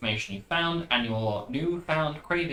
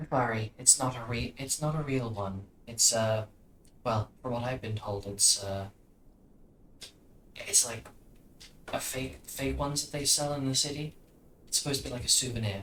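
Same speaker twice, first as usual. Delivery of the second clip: soft, hushed half-whisper, close to an ear; 6 dB quieter than usual. Narrator voices Sabrina half-whispering in Scoria's ear as a player listens, Sabrina half-whispering. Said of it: "as Sabrina whispers in Scoria's ear".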